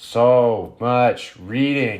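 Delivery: lazy, half-hearted zombie voice, drawn-out "so". Recounting a day of summarizing notes, in a lazy zombie voice. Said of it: "Zombie voice".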